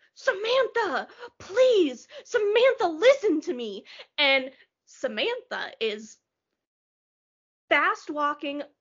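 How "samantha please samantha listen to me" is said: put-on high, pleading, begging yell. Retelling a stranger heard shouting while she was walking, imitating a man yelling. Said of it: "I hear a guy yelling like".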